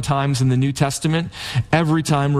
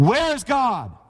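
stern voice raised very high in pitch; 9 semitones higher than usual. A preacher, shaking his finger in a boy's face, demands again: raised voice. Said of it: "the preacher raised his voice even more".

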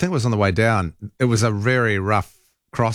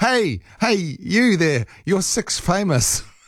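very high, very slow, drawn-out call; 9 semitones higher than usual. Retelling how a teammate called out to a girl: imitating someone calling out. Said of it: "He called out to her".

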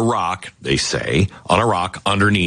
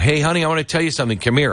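loud, high, deliberately raised calling-out voice; 9 semitones higher than usual. Retelling calling out to his wife standing far behind: imitating speaking loudly. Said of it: "I said that out loud".

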